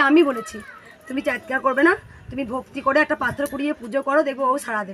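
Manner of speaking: plain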